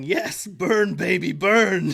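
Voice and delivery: mock very slow, stretched-out, drawn-out yelling. Retelling a book scene as things explode: imitating Donut yelling. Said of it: "she's yelling".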